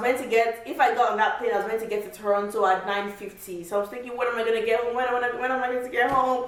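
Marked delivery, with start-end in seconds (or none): 4.2-6.5 mock weepy, tearful voice through sobs. Retelling a missed flight to Toronto: retelling own crying. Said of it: "I was just crying".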